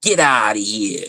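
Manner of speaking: put-on Boston Italian tough-guy voice. Mocking what outsiders expect New Yorkers to say: mock Boston Italian mob accent. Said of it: "that sounds like some Boston Italian shit".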